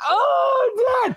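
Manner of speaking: very high, drawn-out, fake yelp of pain. Retelling a staged store prank with dad: imitating a faked pain cry. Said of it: "and I would fake it".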